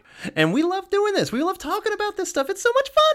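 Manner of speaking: over-excited gushing, very high, swooping. A co-host introducing the show with his partner, high excited voice. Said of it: "see how my high voice gets".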